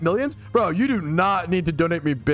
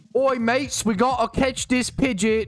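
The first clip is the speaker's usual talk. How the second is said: fake British accent, pitched up; 6 semitones higher than usual. Streamer doing a redeemed minute of British accent: put-on British accent. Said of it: "Thanks for redeeming the minute of the British accent".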